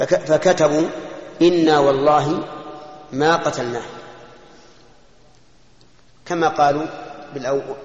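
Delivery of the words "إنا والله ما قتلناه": ordinary talk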